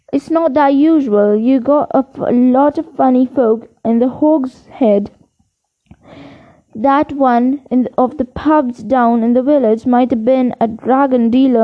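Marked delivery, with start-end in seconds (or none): none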